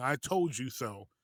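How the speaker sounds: mock, mild, slow, drawn-out, called-out delivery. Retelling what a father in the stands kept saying: imitating someone saying it loudly. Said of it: "very loudly saying".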